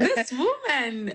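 excited voice. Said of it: "I'm looking at you excitedly".

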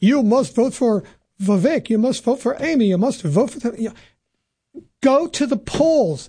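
put-on partial Russian accent slipping in. Speaker mimicking what voters are being told; half Russian accent. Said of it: "That was almost like a half Russian accent there".

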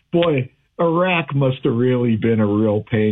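ordinary delivery

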